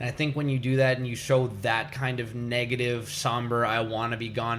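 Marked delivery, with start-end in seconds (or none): none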